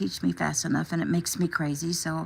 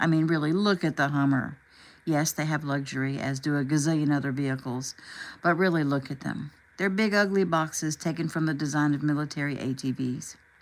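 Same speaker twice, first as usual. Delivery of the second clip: usual speaking voice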